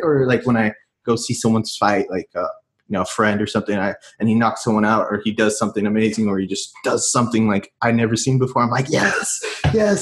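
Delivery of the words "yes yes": high mild mock scream. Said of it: "I'm screaming".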